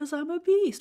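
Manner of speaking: voice shooting upward, high and loud. Boasting about replying faster than uplines: voice going high. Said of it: "Why did your voice get so high?".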